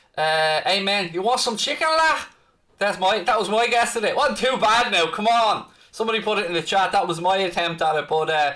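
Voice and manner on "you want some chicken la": high-pitched mock Scouse accent. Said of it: "my, uh, Scouse accent is nowhere near as good as, as Fabinho's was".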